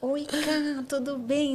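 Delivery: sugary, high, sweet voice. Describing how sweet she sounds on audio: imitating Carol's sweet soft voice. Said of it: "é todo meiguinho".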